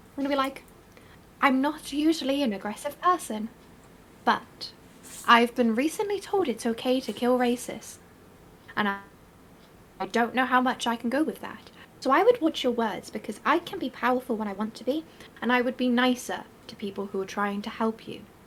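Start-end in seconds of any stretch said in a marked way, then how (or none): 1.4-18.2 menacing, hushed, close half-whisper. A player character leans close to him, out of the others' hearing: menacing half-whisper. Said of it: "I'm going to whisper it so none of the others can hear it".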